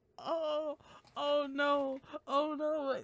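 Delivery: teary voice, crying sound in oh-no. After accidentally swearing on a recording, tearing up. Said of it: "I'm actually tearing up".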